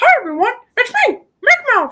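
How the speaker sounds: belted out high in a sing-song tune. Recalling a stream where viewers found out he could talk like this, in a Mickey Mouse voice. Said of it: "I could talk like Mickey Mouse".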